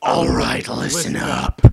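callous, harsh, cold, loud delivery. A gunman in the center of a crowd addresses the partygoers, harsh cold voice. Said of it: "His voice was harsh and cold".

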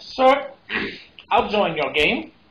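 put-on Southern accent. Speaker, who is not Southern, voices a man's reply, Southern accent. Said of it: "I'm not Southern, so I don't know why I'm talking like that".

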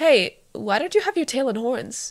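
suspicious, doubtful, wary, probing tone. [name], meeting dorm-mate Cassidy, asks her a question, suspicious.

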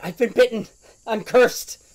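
freaking out. A game character who has just been bitten, freaking out. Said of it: "Judy starts freaking out".

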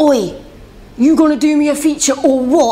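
London accent impression. Acting out a dm asking for a feature: london accent impression. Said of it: "That's my London accent".

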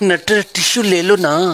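mock lovingly said, sweet, tender, affectionate coaxing. Coaching someone to ask for the tissue nicely: said lovingly. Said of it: "ऐसे बोला प्यार से".

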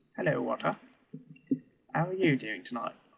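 poor fake British accent. Opening a conversation with a greeting: poor British accent. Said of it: "why are you talking in a British accent? A poor British accent".

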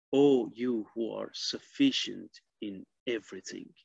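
ordinary talk, nothing marked

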